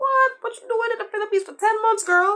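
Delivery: high, loud incredulous squawk.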